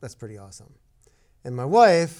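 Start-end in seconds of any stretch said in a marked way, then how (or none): 0.0-0.7 muttered under breath, much quieter, lower. Speaker recalling a Ferrari passing him and his wife, retelling saying it under his breath. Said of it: "kind of under my breath".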